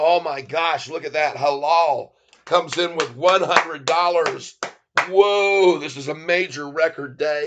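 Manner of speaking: loud, thrilled, gushing, excited shouting. Speaking to everyone on a record day, in a loud voice. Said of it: "I'm sorry if I'm getting too loud here".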